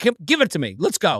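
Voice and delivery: put-on annoyed tone. Retelling grabbing a woman's phone for a selfie, imitating own annoyed self. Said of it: "I was so annoyed".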